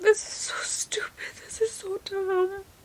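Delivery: whispered, hushed, breathy words through ugly sobs. Speaker talking through tears about something that hurts, ugly crying. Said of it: "I'm ugly crying too".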